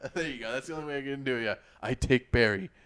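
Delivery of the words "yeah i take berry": put-on caveman voice, louder and slower. Two people acting out cavemen arguing over berries, in a caveman voice. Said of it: "I can't find a caveman accent".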